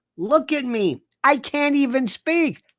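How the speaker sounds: high-pitched, shouted ranting yell. Mocking an aging coot by acting out what he should say: retelling a yell. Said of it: "I'm yelling now".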